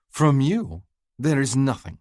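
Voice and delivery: haughty, superior tone. Reading a novel aloud, a character scoffing at a suitor: lofty arrogant voice. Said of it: "Her voice is lofty and arrogant".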